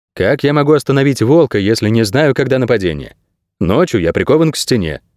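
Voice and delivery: plain reading voice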